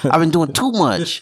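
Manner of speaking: high, fast, fake-mad exhausted delivery.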